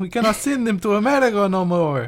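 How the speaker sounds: very high-pitched put-on Italian accent. Joking about toy eggs with another speaker: put-on italian accent.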